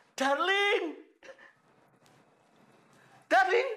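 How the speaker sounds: loud shouting, yelling. Calling out after finding only empty plates: shouting. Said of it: "teriak-teriak gitu".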